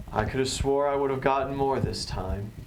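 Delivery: faintly let-down, almost disappointed voice. Narrating the scene, the speaker voices a voice the players hear, almost disappointed. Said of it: "almost a disappointed voice come through".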